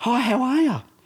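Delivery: bright, happy, very high-pitched cheerful voice. Retelling two visitors greeting at the door: imitating cheerful smiling girls. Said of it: "they got big smiles and they're happy as".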